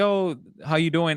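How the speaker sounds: put-on cheerful voice. Retelling how a store clerk greeted customers: imitating a cheerful greeting. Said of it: "so cheerful".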